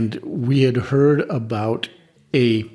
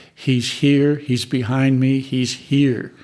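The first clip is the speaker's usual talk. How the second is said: ordinary talk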